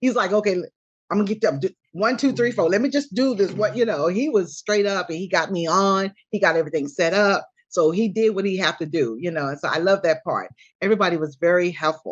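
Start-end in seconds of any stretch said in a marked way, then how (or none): 0.3-3.5 acted-out all-business, matter-of-fact manner. Describing how David set everything up, imitating David's businesslike manner. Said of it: "he's like a really business like".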